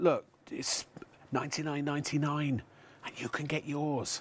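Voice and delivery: hushed whisper. The speaker addresses the audience, for no stated reason, whispering. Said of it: "I don't know why I'm whispering".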